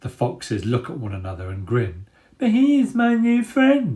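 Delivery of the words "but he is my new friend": very high, taunting, mocking baby voice. Reading a story where a fox mocks a rat's words: mocking babyish voice. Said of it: "repeats the skulker in a babyish voice".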